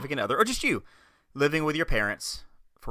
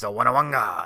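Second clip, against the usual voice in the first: put-on alien character voice; 2 semitones lower, 4 dB louder than usual. Describing a character who took over Jabba's area, in Bib Fortuna voice. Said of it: "And he talked like this".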